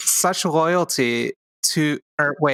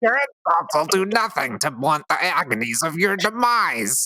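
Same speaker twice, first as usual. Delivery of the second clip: comic put-on vampire voice; 2 semitones higher than usual. Reading a game vampire's line aloud: Gilbert Gottfried voice. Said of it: "it's Gilbert Godfrey, right? So it's like".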